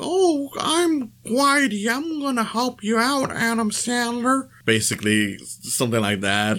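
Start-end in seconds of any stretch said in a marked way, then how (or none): 0.0-4.5 very high, slow, drawn-out, annoying voice. Describing a character given the most annoying voice: annoying Whitey voice. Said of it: "They give him the most annoying voice, where he's like".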